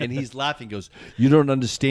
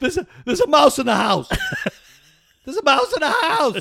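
mock screaming; 14 semitones higher than usual. Retelling a woman screaming on the phone after waking you, imitating someone screaming. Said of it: "And she's screaming".

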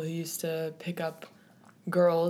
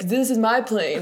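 put-on drunk voice, higher and louder; 5 semitones higher, 7 dB louder than usual. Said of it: "act really drunk".

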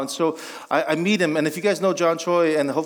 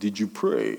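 put-on old Korean man voice, vampire-like; 8 semitones lower, 5 dB quieter than usual. Retelling a meeting with a pastor: imitating Korean old man, Dracula-like voice. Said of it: "this Korean old man, yet Dracula-like voice".

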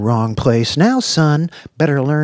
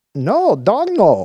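high, defensive, protesting tone; 6 semitones higher than usual. A boy answers a pointed question from a woman; defensively. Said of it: "the boy said defensively".

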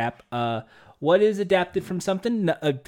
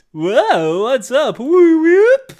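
booming, very slow, drawn-out cheesy game-show host voice; 8 semitones higher, 9 dB louder than usual. Describing a game show character, imitating a stereotypical game show host.

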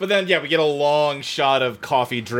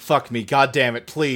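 ordinary talk

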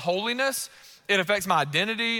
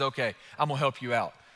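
play-acted, very low, deep, dead-serious voice; 8 semitones lower, 4 dB quieter than usual. Retelling a daughter's late-night offer to help: imitating Sadie, dead serious. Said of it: "She thinks for a second and dead serious".

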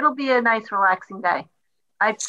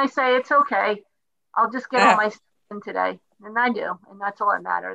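normal talking voice

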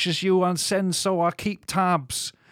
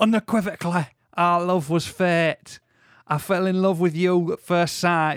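put-on, sliding into a Yorkshire accent. Reading a love poem aloud in an attempted Manchester accent: put-on Yorkshire accent. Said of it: "it's Yorkshire, isn't it?".

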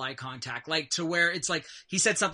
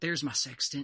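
whispered. Voicing someone behind the players at the movies: whispered line. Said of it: "you hear a whispered".

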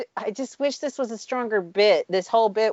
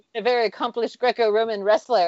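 usual speaking voice

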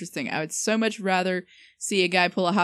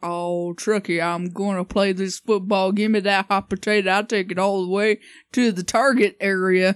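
big, loud cartoon talking-truck character voice; 5 dB louder than usual. Joking about a truck playing football, speaking as the truck in a talking truck voice. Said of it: "that was my attempt at the truckee voice".

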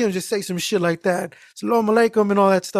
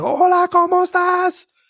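acted-out, shrill, high-pitched yelling; 10 semitones higher than usual. Retelling a supervisor's phone greeting, imitating Yvonne's yelling phone voice. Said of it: "she has this voice on her".

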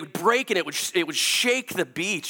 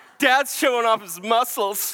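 playful, needling, mocking, teasing tone; 5 semitones higher than usual. Retelling how a little daughter mocked the running, sweating speaker: imitating Sadie mocking. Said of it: "mock me".

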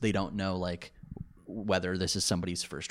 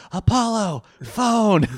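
shrill, very loud, high-pitched holler; 12 semitones higher, 11 dB louder than usual. Describing how the self-styled communications officer answers calls, imitating someone yelling. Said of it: "He does that thing where he yells".

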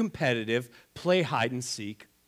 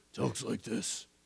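dropped, quiet, hushed superhero voice; 2 semitones lower, 8 dB quieter than usual. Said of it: "as he's Batman".

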